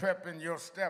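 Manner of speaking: ordinary talk, nothing marked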